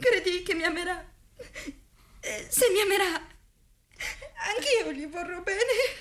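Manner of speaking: tearful voice, crying through words. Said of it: "Ma perché piangi".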